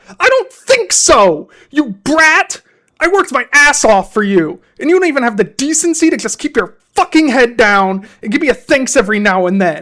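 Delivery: very loud, shrill, furious screaming rant. Reading a first-person story, the narrator screams at her: angry screaming.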